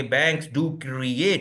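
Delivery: strong emphasis on the word create. Quoting a presenter's line about banks, strong stress on create. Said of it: "वो create को उन्होंने create करके इस तरह बोला कि मतलब वो लोगों को एम्फोसाइज कर रहे थे".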